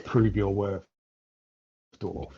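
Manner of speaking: contemptuous, disdainful words squeezed through gritted teeth. In a role-play game, a character drives an axe in: disdainful, through gritted teeth. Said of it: "through gritted teeth, you can tell there's some sort of disdain in my voice".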